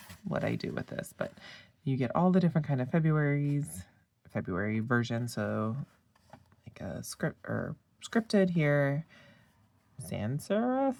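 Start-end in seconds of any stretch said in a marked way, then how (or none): 10.1-11.0 unsure, questioning intonation. Naming a font style, unsure of the name: questioning tone. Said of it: "I say that very questioning".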